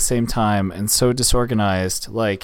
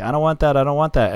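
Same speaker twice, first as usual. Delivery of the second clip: put-on high, whiny complaining like a fussy child; 5 semitones higher than usual. Retelling a child complaining about food: imitating a child complaining. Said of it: "is complaining, like".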